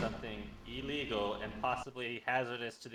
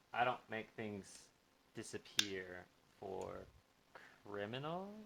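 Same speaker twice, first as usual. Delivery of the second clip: very hushed, close, leaning-in half-whisper; 2 semitones lower, 11 dB quieter than usual. A player's character leans in and half-whispers to a man: leaning in, half-whispering. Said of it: "I lean in and whisper".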